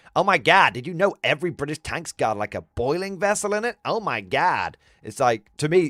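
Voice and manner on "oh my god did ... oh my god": fake, put-on American accent. Mimicking what everyone says, switching accents mid-story: put-on American accent. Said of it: "gotta do like an American accent".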